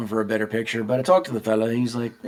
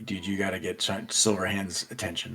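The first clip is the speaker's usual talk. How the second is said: barely audible, very quiet, hushed, urging whisper; 4 semitones lower, 13 dB quieter than usual. Whispering to another player during a scene, urging them on: whispering. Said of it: "I'm, like, whispering to you, like".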